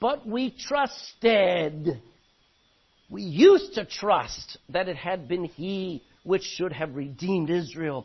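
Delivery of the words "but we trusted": heavy stress on trusted, drawn out very slowly. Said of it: "look at the past tense".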